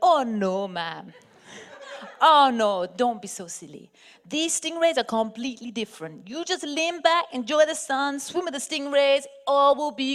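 put-on Antiguan accent. After asking a man about the stingrays, the speaker quotes the reply: retelling a reply in a put-on accent. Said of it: "I have to do an accent".

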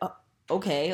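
mock irritated, annoyed and puzzled tone. Retelling a man's reply after being thanked: imitating annoyed, confused reply. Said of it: "kind of annoyed and confused".

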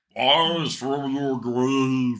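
high, booming arcade-game announcer voice. Talking about revenants rising from the grave, doing the Altered Beast intro voice. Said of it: "that's my impression of the start of Altered Beast".

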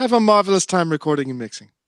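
dapper put-on British accent. Show the others the part you always do in British accents, in a dapper put-on British accent. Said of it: "because you said it in such a dapper way".

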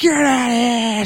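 furious shout. Repeating the line a lady in a sample yells: imitating an angry yell. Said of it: "the lady in that sample that yells".

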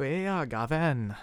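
put-on, attempted Welsh accent. Asked to try another accent, the speaker gives an attempted welsh accent. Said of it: "Shall I try my Welsh accent as well?".

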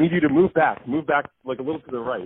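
put-on hurried, half-yelled delivery. Retelling how the counter guy yelled at them, imitating someone yelling. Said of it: "yelling at me. He was like".

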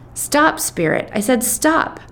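stern, high, drawn-out shout. A narrator reads the hostess at a party where a planchette moves, shouting. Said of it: "the hostess shouts".

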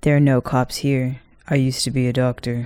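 flat, lifeless, dull monotone with no lift. Mimicking a man's lame way of talking: imitating his flat monotone. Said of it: "he has this lame monotone too".

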